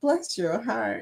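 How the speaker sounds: put-on soft elderly Southern lady accent. Explaining how an old Southern lady says the phrase, in an old Southern lady voice. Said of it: "it's that old Southern old lady".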